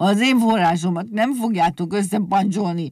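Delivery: cross, defiant outburst, called out crossly. Mazsola shouts at Rezsőke and Egérke, shouting. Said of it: "kiabálta".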